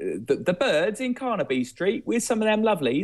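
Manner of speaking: cheeky, high-pitched, laughing mock-British banter.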